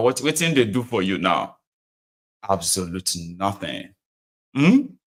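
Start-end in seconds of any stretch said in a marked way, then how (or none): none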